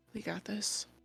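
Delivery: muttered under breath. Taking a deep breath in character before a fight: muttering to himself. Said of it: "deep breath and mutter to myself".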